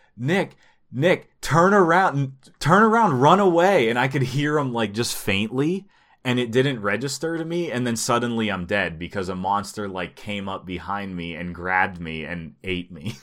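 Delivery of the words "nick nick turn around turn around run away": very high, shrill, loud alarmed shouting yell. Retelling a game moment when a teammate warned him: imitating someone yelling. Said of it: "I hear one of the guys start yelling".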